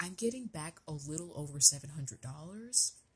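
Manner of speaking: hushed, whispered voice. Sharing the refund amount, whispering because people nearby get jealous. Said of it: "Sorry for whispering".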